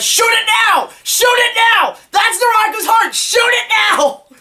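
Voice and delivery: high climbing screams. Retelling own reaction while watching an episode, screaming like Daffy Duck. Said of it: "there I am just screaming like Daffy Duck".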